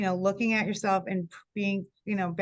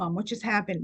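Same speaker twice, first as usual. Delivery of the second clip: put-on crying, tearful voice. Retelling a daughter's phone call after an owl flew by: imitating daughter crying. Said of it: "she called crying, going".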